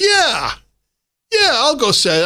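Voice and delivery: swaggering, cocky voice. Speaker retells a man agreeing to make an announcement, imitating a cocky reply. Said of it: "in a very cocky voice".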